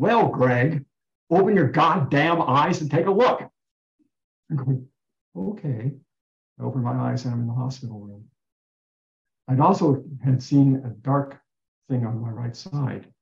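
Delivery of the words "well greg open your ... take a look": very loud, booming voice calling out. Greg recounting a voice he heard on waking in hospital, retelling a very loud voice. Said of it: "this voice very loudly saying".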